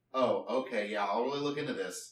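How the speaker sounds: normal talking voice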